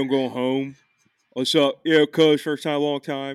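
Delco Philadelphia accent. Speaker demonstrating the accent everyone's trying to do: Delco accent. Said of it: "everyone's trying to do the Delco accent, which is this one".

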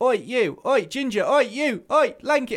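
rude abrupt calling out. Retelling how travellers called out for attention: imitating someone rude and abrupt. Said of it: "sort of just very rude, abrupt".

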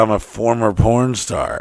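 ordinary talk, nothing marked

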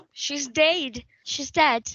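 clumsy put-on Australian accent. Retelling a murder confession, quoting the accused woman to the cop; bad Australian accent. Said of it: "Our Australian listeners are like".

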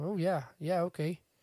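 sounding like someone from Canada. Quoting a man agreeing to an offer: Canadian-sounding accent. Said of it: "made him sound like they're from Canada".

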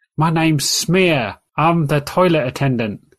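small, little goblin character voice. Voicing Smear, a goblin toilet attendant: little goblin voice. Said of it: "the small face of a goblin".

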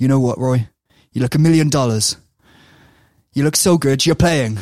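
slight West Country twist on words. Retelling Brian Clough's words to a player trying on a shirt: Brian Clough, West Country accent. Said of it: "it's got a bit of West Country there".

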